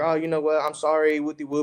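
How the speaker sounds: put-on weepy, sobbing, tearful voice. Retelling an argument where the partner starts crying: imitating someone crying. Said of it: "she starts crying, and she's like".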